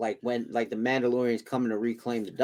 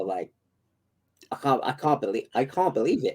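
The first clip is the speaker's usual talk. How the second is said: choked-up voice cracking with emotion; 2 semitones higher than usual. Recalling a scene that made them cry with joy, getting choked up. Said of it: "I'm getting choked up now".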